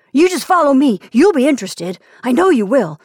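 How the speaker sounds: shrill, loud, excited, insistent tone. Narrator reads a man explaining to two perplexed men, shrill with excitement. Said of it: "His voice was shrill with excitement".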